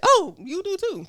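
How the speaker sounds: mock mild, offhand tone, very high pitch. Retelling what a young girl replied to a remark, retelling in a mild tone. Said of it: "in the like most like mild tone".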